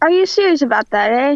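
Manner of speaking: very loud put-on Canadian accent. Answering a call for Canadian accents: put-on Canadian accent. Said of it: "We will now open the floor to other Canadian accents".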